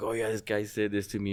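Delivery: put-on child's voice, tearful, crying through tears. Retelling complaining to his mom's husband as a kid: imitating himself crying. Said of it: "you know, crying".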